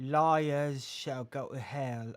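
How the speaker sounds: awful fake British accent, loud and slow. Reading a scripture aloud, putting on a terrible British accent. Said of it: "A terrible British accent".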